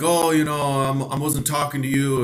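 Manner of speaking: play-acted, defensive, brushing-off tone. Retelling a coworker's reply after being called out: imitating someone getting defensive. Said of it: "he got all defensive".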